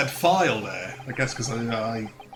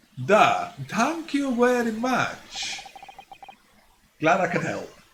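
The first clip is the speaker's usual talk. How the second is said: put-on very high, swooping, odd broken Russian accent; 10 semitones higher than usual. Voicing a character replying to a young man, really weird voice. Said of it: "I'm just giving that guy a really weird voice".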